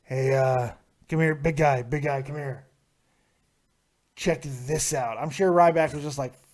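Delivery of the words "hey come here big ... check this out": promoter voice with a persuasive, selling tone. Acting out Vince calling the wrestler over: imitating Vince. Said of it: "when Vince walked up to him and said".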